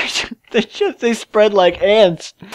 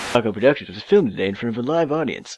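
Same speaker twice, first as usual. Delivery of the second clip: jazzy announcer voice, much lower and quieter; 9 semitones lower, 10 dB quieter than usual. Recording the opening announcement for their production in a jazz voice. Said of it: "I need like a jazz voice".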